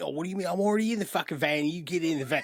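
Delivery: put-on British gangster voice. Imagining the crew as a Guy Ritchie film: Guy Ritchie film gangster voice. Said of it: "it's not a Guy Ritchie film, but if you were, they'd be like".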